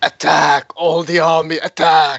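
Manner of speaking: slow, drawn-out, roaring giant yell. Voicing a giant using intimidation as a bonus action: yelling giant. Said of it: "he will actually yell in giant".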